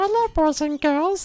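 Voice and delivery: very high, loud character voice calling out. Trying out a voice right after claiming an impression: Elmo voice. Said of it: "I can do Elmo".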